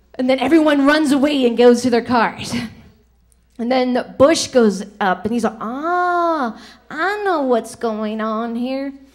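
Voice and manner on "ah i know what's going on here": very slow put-on voice with long drawn-out "ah". Telling a joke where Bush goes up after Clinton to get shot, in a Bush impression. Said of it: "That was my Bush impression".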